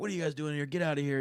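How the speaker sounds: irritated, ticked-off, high-pitched voice. Retelling a movie scene where Noah is ticked off: imitating angry Noah. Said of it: "Noah's really ticked off".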